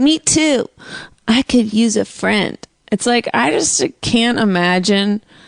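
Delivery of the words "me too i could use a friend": put-on lonesome late-night chat-line girl voice. Teasing the other speaker about chat-line ads: imitating lonely girls from the ads. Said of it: "you get".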